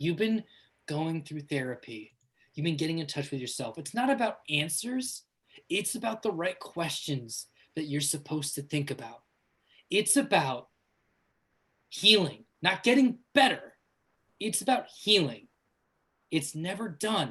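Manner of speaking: soft whisper. Running a game, the narrator voices a whisper in the player's ear: whispering as Meg Ryan. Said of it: "You hear the voice of Meg Ryan whisper in your ear".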